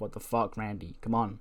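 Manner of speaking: usual speaking voice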